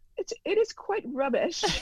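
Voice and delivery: put-on British accent. Asked how the British accent is coming, the speaker answers in an attempted British accent. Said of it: "how is the British accent coming actually?".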